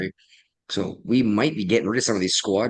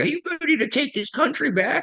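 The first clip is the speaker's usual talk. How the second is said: put-on, excited, very high screaming. Recounting what AOC did while jumping around, the speaker imitates AOC screaming. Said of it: "jumping around and screams like".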